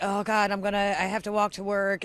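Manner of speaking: ordinary delivery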